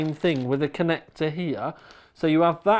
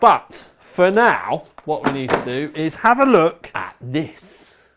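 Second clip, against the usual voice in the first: loud, booming put-on showpiece impression voice; 5 dB louder than usual. Starting to look at a new board: Clarkson voice. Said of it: "in my very best Clarkson voice".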